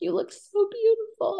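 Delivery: very high voice, cracking with emotion. Retelling his words in an emotional moment, imitating his voice cracking. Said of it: "And his voice was cracking".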